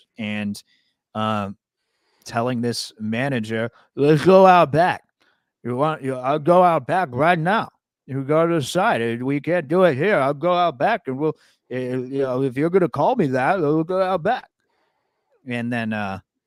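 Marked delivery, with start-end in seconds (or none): 4.0-14.5 put-on drunk voice with slurring. Retelling a bar video of drunk Ric Flair challenging a manager: imitating drunk slurring Ric Flair. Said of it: "clearly drunk, slurring his words".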